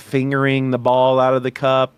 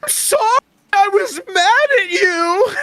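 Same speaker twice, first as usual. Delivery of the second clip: mock, very high, tearful, sobbing crying; 4 dB louder than usual. Retelling her reaction right after being proposed to: imitating someone crying. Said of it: "instantly crying".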